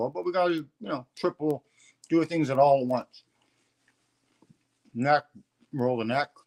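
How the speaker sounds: talking with mouth full. Speaker guides listeners to prepare for a session while eating, talking with mouth full. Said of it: "Sorry for my mouthful".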